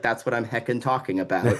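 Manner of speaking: ordinary delivery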